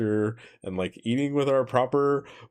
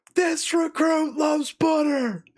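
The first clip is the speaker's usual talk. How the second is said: very high, all-out, top-of-lungs screaming yell; 3 dB louder than usual. Recalling a chow hall full of Marines and recruits, the speaker retells a scream. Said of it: "I screamed at the top of my lungs".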